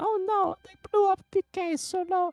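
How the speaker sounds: little European man voice. Showing a voice that sounds like a little European man: little European man voice. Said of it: "That's like a little European man".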